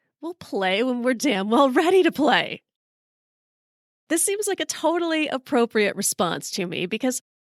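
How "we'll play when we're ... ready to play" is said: play-acted irritated, angry tone, mildly yelled. Retelling how a golfer told them to hurry, speaker retelling a yell. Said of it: "So I yelled back".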